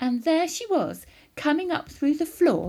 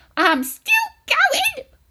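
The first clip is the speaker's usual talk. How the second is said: very high, loud, screechy voice; 7 dB louder than usual. Reading a story, Grandma calls down to George from the attic: Grandma's old screechy voice. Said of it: "came the old screechy voice from up above".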